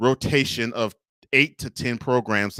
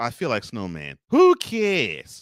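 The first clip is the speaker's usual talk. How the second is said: fake, swooping New York accent. Relaying quotes from Victor, in Victor's faux New York accent. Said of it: "Had to do the faux New York accent".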